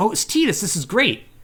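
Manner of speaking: mock thrilled, overjoyed, high, really excited reaction. Retelling a story scene where she recognizes him: imitating someone really excited. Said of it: "really excited".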